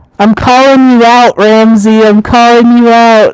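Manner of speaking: emphatic, insistent voice. Calling out a friend and podcast co-host, yelling. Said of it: "Sorry if I'm yelling".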